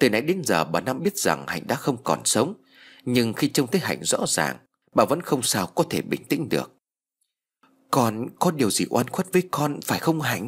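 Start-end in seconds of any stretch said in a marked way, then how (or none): 7.9-10.5 trembling, quavering voice, higher. A woman facing a girl she knows is dead asks her, in a trembling voice. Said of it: "Bà Năm run giọng hỏi".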